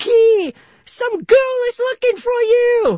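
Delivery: very high, very loud scream. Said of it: "he screamed really loud".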